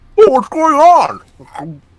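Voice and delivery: very high and loud, talking through food. Speaker voices Max, who has a mouthful of pizza, talking through it. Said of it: "Max with a mouthful of like pizza goes".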